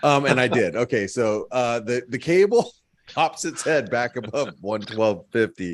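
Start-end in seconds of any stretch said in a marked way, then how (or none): 1.8-5.7 giggling mid-sentence, talking through laughter. Giving a market update after making a joke, laughing while talking. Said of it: "I'm sorry, I'm laughing. I can't help it".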